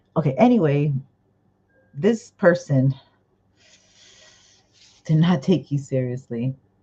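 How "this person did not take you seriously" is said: speaking through laughter, words broken up by giggles. Giving a reading to a viewer, laughing while talking. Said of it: "I'm sorry, I'm laughing".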